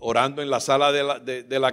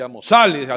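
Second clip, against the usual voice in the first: usual speaking voice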